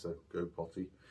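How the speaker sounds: calming, soft, deliberately dull, boring tone. Showing the phrase to use at a puppy's potty spot, in a calm, boring voice. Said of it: "in a nice calming, boring voice".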